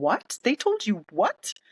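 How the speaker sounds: play-acted dumbfounded disbelief, high and swooping. Retelling a woman's dumbfounded reaction on a call, imitating stunned disbelief. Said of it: "she was dumbfounded".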